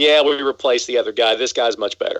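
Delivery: plain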